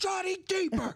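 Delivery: loud, high-pitched shouting. Telling a joke, acting out the dad's line, imitating a dad yelling. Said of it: "The dad yells".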